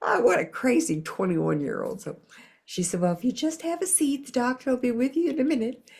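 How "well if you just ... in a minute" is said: put-on Southern accent, pitched higher. Retelling the receptionist's reply in a southern accent. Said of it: "I had to do that the whole time".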